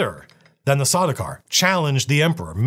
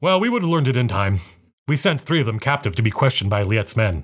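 ordinary delivery, nothing marked

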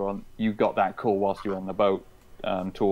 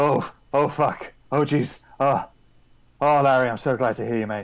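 breathless, agitated, a bit manic, higher and faster; 5 semitones higher, 4 dB louder than usual. Character who has taken too many stimulants greeting someone, out of breath, agitated. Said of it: "he sounds kind of out of breath. Kind of agitated, almost like a little bit manic".

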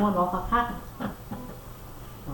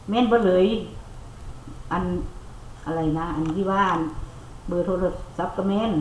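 plain

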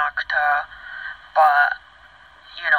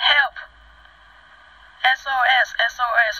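loud screaming. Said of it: "she was screaming".

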